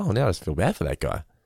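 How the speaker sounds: ordinary delivery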